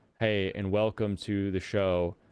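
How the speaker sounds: mock deadpan announcer delivery, flat and expressionless. Imitating how a man opens his show, imitating a deadpan delivery. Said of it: "He talks like this. ... a very, I almost say, deadpan delivery".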